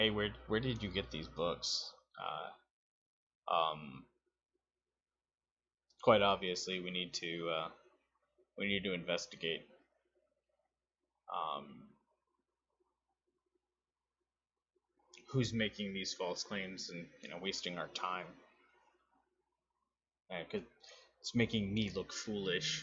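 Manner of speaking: low, hushed stage whisper aside. A game narrator voices a character half-whispering to one of his lieutenants. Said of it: "he kind of whispers".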